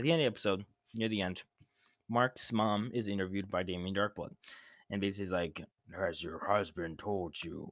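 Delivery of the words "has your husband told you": slow, probing, drawn-out delivery. Retelling a show scene where Mark's mom is interviewed: Damien Darkblood impression. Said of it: "I have to do the impressions".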